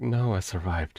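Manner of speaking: sighing while speaking. Voicing a character who answers the player's question: sighing while speaking. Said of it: "sighing, like".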